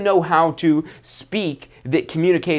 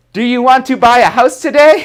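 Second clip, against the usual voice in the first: over-the-top, loud, high, crazy enthusiasm; 8 semitones higher, 7 dB louder than usual. Giving advice about smiling in face-to-face talk, demonstrating going crazy over the top. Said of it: "go crazy like".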